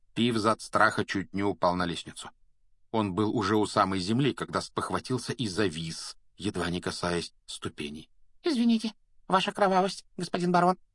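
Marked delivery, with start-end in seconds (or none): 8.5-10.8 very high, fast, groveling fawning babble. Apologizing to the invisible baron for a silly joke, fawning and groveling. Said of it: "подобострастно заюлил он".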